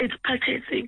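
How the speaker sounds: choked-up, emotional voice with words catching. Person confirming it is a home purchase, emotional, choked up. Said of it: "Sorry, I'm emotional".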